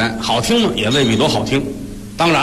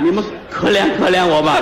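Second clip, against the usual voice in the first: ordinary talk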